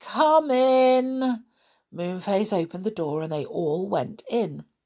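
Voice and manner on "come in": sleepy, high, raised voice, drawn-out. Narrator reading a voice answering a knock at the door, sleepy voice. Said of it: "A sleepy voice cried".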